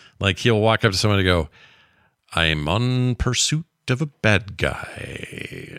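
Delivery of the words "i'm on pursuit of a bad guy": very slow, bored, phoned-in, odd cadence and rhythm. Showing how the voice actor phones it in, do a phoned-in Peter Weller voice with a weird cadence. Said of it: "kind of on this weird cadence like that".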